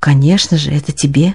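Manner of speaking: calmed, reassured, relieved tone. Narrator reads the husband's answer to his wife, reassured. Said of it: "отвечал успокоенный муж".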